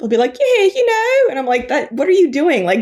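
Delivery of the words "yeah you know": very high, put-on British accent. Mocking how Americans attempt British accents, fake British accent pitched higher. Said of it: "they pitch their voice higher".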